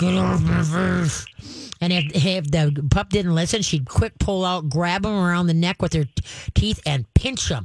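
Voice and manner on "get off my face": slow, rough, gravelly growl. Describing a mother dog warning a pup hanging off her lip, deep slow growl. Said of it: "she'd give him a deep, slow growl like".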